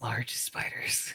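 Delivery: hushed whisper, close into the ear. Playing a character who looks around and whispers into another character's ear: whispering. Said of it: "goes and whispers in Tuesday's ear".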